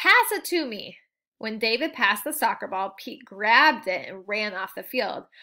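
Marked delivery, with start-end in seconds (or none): 0.0-1.0 high, drawn-out calling yell. Pete runs over to the field and yells to David. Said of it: "Pete ran over to the field and yelled".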